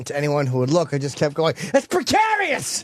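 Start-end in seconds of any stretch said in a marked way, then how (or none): 1.7-2.8 very high, insistent, repeated shout. Retelling pointing up at a crane for anyone looking: retelling own shouting. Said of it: "I was just shouting it at everybody".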